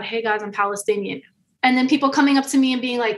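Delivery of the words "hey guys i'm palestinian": mimicked whispering. Retelling what was told to people on the side: imitating a whisper. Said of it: "whispering to people on the side".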